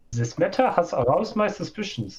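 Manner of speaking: put-on German accent, high and full of concern. Reacting to a suspicious moment in the game: concerned German accent. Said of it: "That is the German concern noise".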